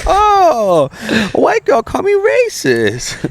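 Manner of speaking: bad fake Chinese accent, very high-pitched and very slow. Retelling a reply to Tina in a bad put-on Chinese accent. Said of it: "not even a good accent".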